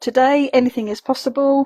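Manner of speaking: ordinary delivery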